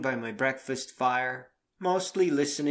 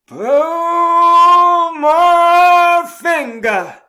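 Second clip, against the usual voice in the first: worst fake Southern drawl, very loud, very high; 17 dB louder than usual. Retelling what a woman said: worst fake Southern accent, long drawl. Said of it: "in the worst fake Southern accent".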